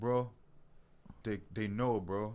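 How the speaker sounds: slow, drawn-out voice. Retelling a joke with a friend, imitating a friend's voice. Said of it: "and he sounded just like this".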